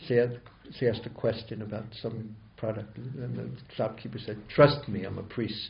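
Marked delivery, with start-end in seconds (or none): 4.5-5.7 low-pitched, heavily sarcastic tone. Retelling what a shopkeeper said to a customer, mimicking very sarcastic tone. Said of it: "very sarcastically saying".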